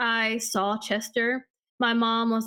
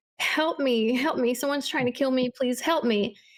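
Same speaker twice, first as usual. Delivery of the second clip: put-on tearful, crying, begging voice, repeated over and over. Retelling a strange phone call from a child's voice: imitating a child crying. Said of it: "the voice starts crying".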